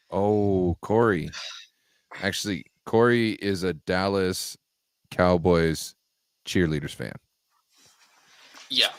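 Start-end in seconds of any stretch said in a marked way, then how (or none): 2.8-7.1 very slow, halting, deliberate, drawn out with breaks between words. Talking about a viewer in chat, said real slow. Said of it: "I just said it real slow".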